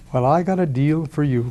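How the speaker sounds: put-on sugary-sweet voice. Retelling a phone call asking a finance president for a favor: imitating his own sweetest voice. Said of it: "in my sweetest voice".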